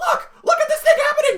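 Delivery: very high-pitched, loud reviewer voice. Imitating a reviewer pointing at a clip: Nostalgia Critic impression. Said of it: "that's my impression of him".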